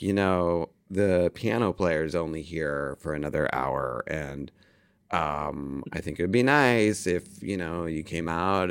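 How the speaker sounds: soft, low, plaintive tone.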